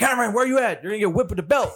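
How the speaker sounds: mock mean, threatening tone. Retelling searching for a missing child, calling in a mean voice. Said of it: "Then it goes a mean voice like".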